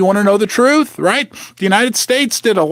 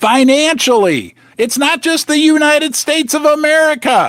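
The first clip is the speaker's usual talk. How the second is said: shouty, driving, pitched-up near-yell; 6 semitones higher than usual. Speaker addressing the listener directly, yelling. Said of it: "I'm yelling at you".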